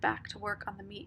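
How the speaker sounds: plain reading voice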